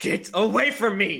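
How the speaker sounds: very loud, high-pitched character yell. Casting a spell in a tabletop game, pointing at a foe, in a loud voice. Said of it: "So in a loud voice".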